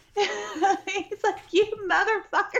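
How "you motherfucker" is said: acted out, toned-down mild yelling. Retelling a man kicking at a tiger, imitating a man screaming. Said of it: "But he is screaming".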